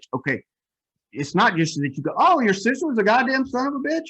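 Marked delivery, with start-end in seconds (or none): 2.2-4.1 light, chirpy, bright, very high-pitched lilt. Showing a tone the lady did not use for her line, a little chirpy. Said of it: "that's a little chirpy".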